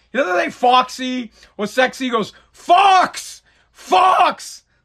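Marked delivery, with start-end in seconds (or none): 2.5-4.6 mock loud, high-pitched shout, said twice. Speaker retells a man sticking his head out toward a lady, retelling someone calling loudly.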